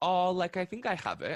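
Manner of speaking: mock nonchalant, tossed-off casual delivery. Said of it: "nonchalantly are like".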